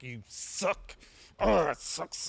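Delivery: put-on held-in outburst. Retelling own reaction while watching Detroit: imitating an emotional, held-in outburst. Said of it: "I used to get real emotional".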